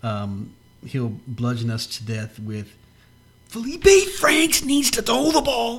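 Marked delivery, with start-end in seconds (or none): 3.5-5.8 bad put-on commentator voice, very high, loud, hammy. Mocking a football commentator, a horrible Gary Danielson impression. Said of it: "that was a horrible Danielson impression".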